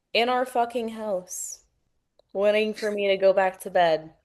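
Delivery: ordinary delivery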